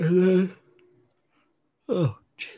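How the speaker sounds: yawning while talking. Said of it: "I'm yawning".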